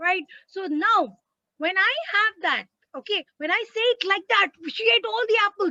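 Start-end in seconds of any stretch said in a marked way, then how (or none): 4.7-5.7 excited, higher. Showing learners how to read a sentence with an exclamation mark: excited exclamation. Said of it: "that's what the exclamation mark is telling me".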